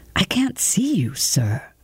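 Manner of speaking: hushed whisper. Theremin, stopping halfway across a darkened room, speaks to Sheeran, whispering. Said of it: "he whispered".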